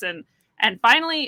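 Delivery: ordinary delivery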